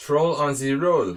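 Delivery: very loud, exaggerated, bad fake French accent. Commenting on a game, tossing off a line in a very bad French accent. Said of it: "Very bad French accent".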